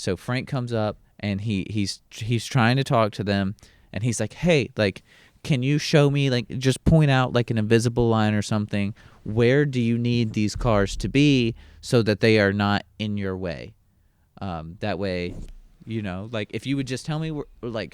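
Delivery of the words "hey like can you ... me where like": normal talking voice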